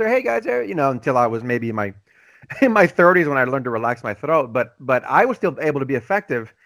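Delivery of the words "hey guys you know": very high, upper-register voice. Showing how they used to speak before learning to relax the throat, higher register. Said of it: "I used to speak up here, higher register".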